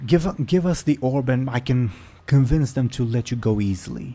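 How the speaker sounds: hostile, loud, angry shouted yell. Game master voicing a woman yelling at a player who rolled from her grasp, angry yell. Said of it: "she yells out".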